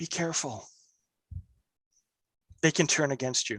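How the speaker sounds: hushed, quiet whisper. Narrating a game to a player, voicing the hammer that whispers, whispering. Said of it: "the hammer whispers to you".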